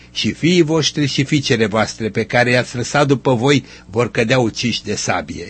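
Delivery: ordinary delivery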